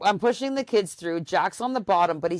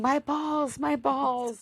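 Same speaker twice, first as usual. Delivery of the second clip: put-on slow, drawn-out, pitched-up toddler wail; 7 semitones higher, 3 dB quieter than usual. Retelling a toddler screaming after falling: imitating a screaming toddler. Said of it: "So he's screaming".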